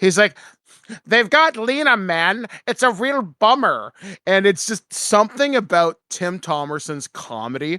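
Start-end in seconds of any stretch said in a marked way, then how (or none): 1.1-3.9 goofy, high-pitched voice. Retelling a film scene where a character talks with her: goofy Stillwell voice. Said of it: "he just does this really goofy voice".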